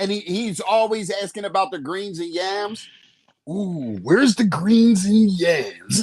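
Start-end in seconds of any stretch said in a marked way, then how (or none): 3.5-6.0 loud, slow voice with words drawn out. Acting out how he is always asking at the cookout, good Randy voice. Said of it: "That's a good Randy voice".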